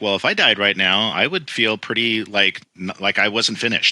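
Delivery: plain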